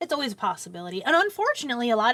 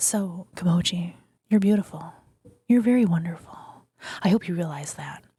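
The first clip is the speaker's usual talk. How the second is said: soft whisper, slower; 4 semitones lower than usual. Asked to whisper more, speaking softly to a listener: soft whisper. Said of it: "Am I whispering too loudly to you?".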